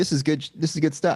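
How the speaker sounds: ordinary talk, nothing marked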